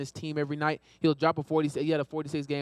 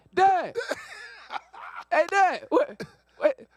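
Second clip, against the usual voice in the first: very high, very slow, stretched-out screams; 4 dB louder than usual. Speaker retells coming downstairs and calling to dad, retelling own screaming. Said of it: "and I'm screaming".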